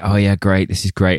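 ordinary talk

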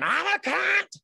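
shrill scream, pitched very high, loud. Speaker recounts a fight with a former partner, imitating Angela screaming. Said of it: "And she's screaming".

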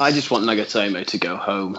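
very low, deeply downcast, depressed voice. Asked what he wants from Santa, he answers, depressed. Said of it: "I've never heard you so depressed".

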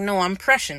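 ordinary delivery

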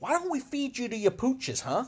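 put-on very high-pitched, swaggering Italian gangster accent. Discussing a Joker scene, quoting his line as Joker with an Italian gangster accent. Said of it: "gives a bit of an Italian gangster swag to his accent".

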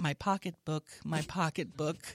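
normal talking voice

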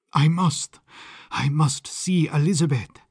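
halting, stumbling, stammering, stuttering speech. Narrator reads Sándor's words as his strength returns; stammering. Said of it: "he stammered".

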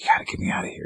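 whisper. Retelling what Luke said to the speaker, imitating Luke whispering. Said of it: "Luke starts to whispers".

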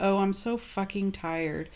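hushed muttered whisper under the breath. A parent retells muttering with back turned to a four-year-old: whispering under breath. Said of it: "me whispering under my breath".

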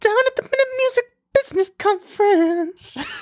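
put-on whisper.

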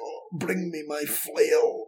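put-on soft, slow, halting, broken Scottish accent. Describing a hulking bloke on a throne, speaker voices him in a broken Scottish accent. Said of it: "in this really kind of broken Scottish accent".

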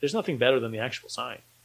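usual speaking voice

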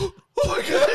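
very high, shrill, mortified, embarrassed cry. Retelling how she projectile vomited, imitating her embarrassed. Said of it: "She's super embarrassed".

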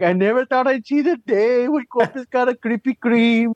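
mock weeping, teary, very high old man voice. Retelling an old man crying on the news: imitating a crying old man. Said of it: "just some old Mexican man crying".

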